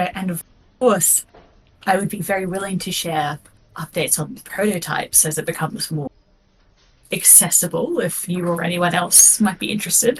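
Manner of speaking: subdued, low-key tone. Playing May in an improvised scene, clearing her throat first, in a quieter voice. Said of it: "in like a quieter voice go".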